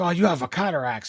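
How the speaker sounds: put-on Japanese man voice. Imagining what the man would say, imitating a Japanese man. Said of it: "if he was a Japanese guy, he'd be like".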